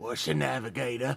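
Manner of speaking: loud failed whisper, not really whispered. Voicing an orc leaning in close to a crew member: loud not-whisper. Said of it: "in a not whisper, he's just like".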